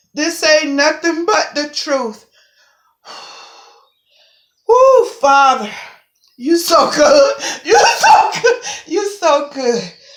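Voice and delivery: voice on the verge of crying. Explaining neutrino findings, the speaker praises Father: starting to cry. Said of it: "I don't even know why I'm starting to cry right now".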